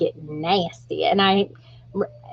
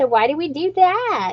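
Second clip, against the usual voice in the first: mimicked passive-aggressive tone, higher pitch; 9 semitones higher than usual. Retelling what a grandmother said about a new hairstyle: imitating passive-aggressive grandma. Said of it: "very passive aggressive".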